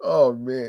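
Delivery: talking through laughter. Reacting to crate challenge news, laughing while talking. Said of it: "I'm sorry for laughing".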